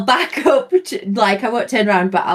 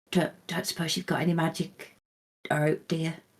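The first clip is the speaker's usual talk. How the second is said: very quiet, private, half-whispered aside; 3 semitones lower, 13 dB quieter than usual. Speaking in character to the kid on your back, half-whispering. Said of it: "whisper to the kid and just go".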